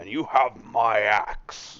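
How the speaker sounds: very slow, drawn-out fantasy dwarf voice. Playing a dwarf in the game, answering another player: Gimli voice. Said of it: "You just wanted me to make the Gimli voice".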